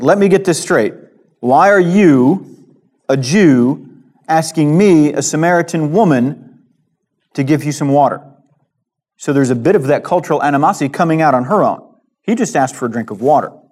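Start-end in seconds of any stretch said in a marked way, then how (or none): 0.0-8.2 pointed, slow, accusing tone with drawn-out "you". Acting out the Samaritan woman questioning Jesus: acting out an accusatory question. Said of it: "it's an accusing, accusatory question".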